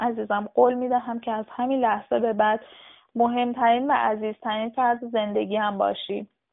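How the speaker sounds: ordinary delivery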